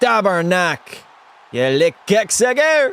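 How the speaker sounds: put-on French accent, high-pitched and slow. Told to stop the french accent, refusing: fake french accent. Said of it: "I will not stop".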